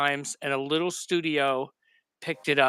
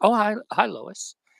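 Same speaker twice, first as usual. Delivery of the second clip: slow, drawn-out, high-pitched, creaky voice; 6 semitones higher than usual. Acting out the hero arriving late while fixing his shirt: imitating Clark Kent. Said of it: "and he'd be like".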